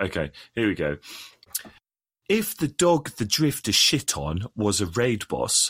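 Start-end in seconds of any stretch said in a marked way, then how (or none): 2.3-5.7 posh English accent, Queen's English. Asked to speak Queen's English, giving it a go: Queen's English accent. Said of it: "Queen's English, please".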